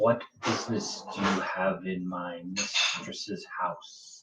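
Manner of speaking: very low, very soft, hushed echoing voice. Voicing something the listeners hear only as an echo in their heads, echo voice inside your head. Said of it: "It is an echo inside of your head that you hear".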